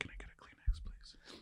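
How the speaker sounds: soft whisper. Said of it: "Why are you whispering?".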